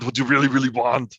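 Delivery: loud, high-pitched yell. Retelling how you yelled without being able to stop it and everyone laughed, do a yelled Schwarzenegger impression. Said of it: "I just was imitating Schwarzenegger so often".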